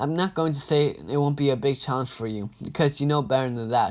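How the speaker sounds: ordinary delivery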